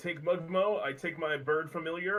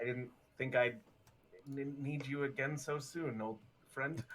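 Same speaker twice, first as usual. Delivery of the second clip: quiet, hushed half-whisper; 7 dB quieter than usual. A player acts out his character speaking to a cup, half-whispering to himself. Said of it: "kind of whispers to himself".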